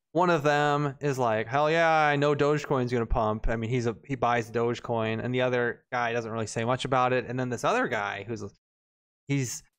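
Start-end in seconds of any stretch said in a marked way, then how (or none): none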